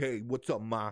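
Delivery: put-on Brooklyn-style street accent. Asking why someone was talking like this, in a brooklyn accent. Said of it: "why are you talking with like this Brooklyn kinda like".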